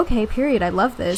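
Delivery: ordinary talk, nothing marked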